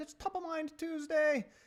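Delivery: poor put-on Irish accent. A host announcing the day's Top of Mind Tuesday segment, in a bad Irish accent. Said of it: "that's the worst Irish accent".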